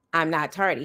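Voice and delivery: put-on adamant, insistent tone. Retelling a student's reply about being late: imitating an adamant denial. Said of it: "Us being adamant in saying".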